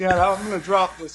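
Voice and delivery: put-on teary, panicky voice. Retelling calling out to dad from a ladder, re-enacting own crying. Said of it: "I'm crying".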